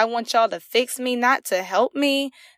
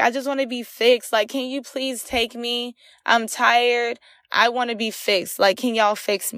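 mock tearful, crying pleading, slower. Recounting what they told her back then, re-enacting their crying plea. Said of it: "And I'm crying".

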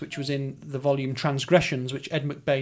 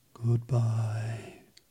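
put-on enigmatic, secretive, mysterious voice; 4 semitones lower, 4 dB quieter than usual. Signing off before a break, saying goodbye in a mysterious voice. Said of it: "I'm going to say goodbye in a mysterious voice".

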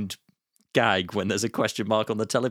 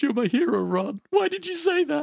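very high, earnest, hurt and upset voice. Quoting an upset film character to the others: imitating Chris Parnell upset. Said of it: "Chris Parnell's delivery when he's upset".

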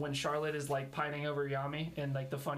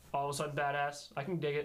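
ordinary delivery

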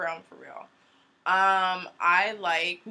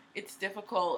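ordinary talk

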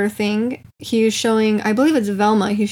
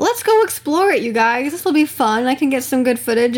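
overly cheerful, eager, chipper, very happy excitement; 3 semitones higher than usual. Retelling a man's reaction on finding a mystery boat in the jungle: imitating someone very happy. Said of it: "he's like very happy".

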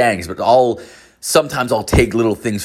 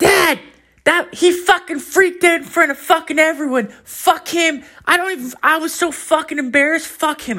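put-on small child's voice, very high-pitched. Retelling overhearing a kid complain on a phone call: imitating a kid's little voice. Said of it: "this little voice, and it's like, a kid".

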